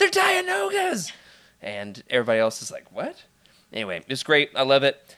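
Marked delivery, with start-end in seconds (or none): 0.0-1.1 high, shrill, all-out nerdy top-of-the-lungs scream. A self-described Star Wars nerd recounts his outburst at the others, retelling a scream. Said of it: "screaming at the top of my lungs".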